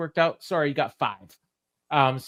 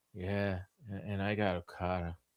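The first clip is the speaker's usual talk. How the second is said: mock unenthusiastic, flat delivery, lower and quieter; 7 semitones lower, 13 dB quieter than usual. Imitating a wrestler's promo line: imitating a flat, thrill-less promo. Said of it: "you said that with all the thrill of".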